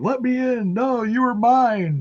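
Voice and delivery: play-acted screaming, very high-pitched. Retelling a wrestling segment where one wrestler screams at another: imitating someone screaming. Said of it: "he's screaming at her".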